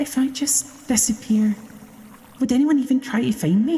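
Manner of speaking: delicate whisper. Voicing a voice heard through a pipe: delicate whisper. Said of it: "delicate whisper".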